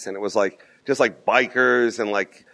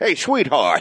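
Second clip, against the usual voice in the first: bad mock Boston accent sounding Cockney; 4 semitones higher than usual. Talking about the movie The Town, trying a bad Boston accent. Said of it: "Cockney Boston bullshit".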